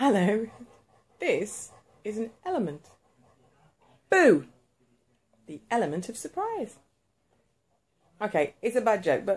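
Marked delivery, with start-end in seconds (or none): 0.0-6.7 put-on podcast host, radio presenter announcing voice. Speaker makes a joke in a podcast radio voice. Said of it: "that's my dog cast radio voice".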